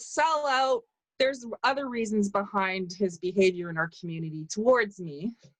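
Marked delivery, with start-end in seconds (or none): 0.0-0.8 re-enacted shouting, pitched much higher. Retelling calling out after someone was introduced as the government; retelling a yell. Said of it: "And I yelled out".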